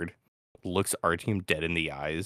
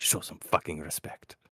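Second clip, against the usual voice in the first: quiet muttering under the breath. A game master voices a character slapping another from behind, under his breath. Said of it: "underneath his breath".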